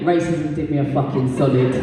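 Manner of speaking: usual speaking voice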